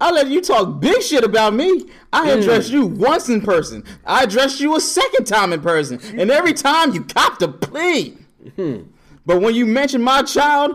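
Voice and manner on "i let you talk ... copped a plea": normal talking voice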